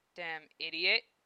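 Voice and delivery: muttered under the breath. A man asked to help with a drum set: muttered. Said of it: "muttered Val".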